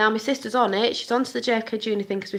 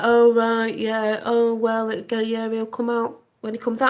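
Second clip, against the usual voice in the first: mock bored, uninterested tone; 4 dB louder than usual. Retelling the sister's reply when the speaker gets excited: imitating sister sounding bored. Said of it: "she's like".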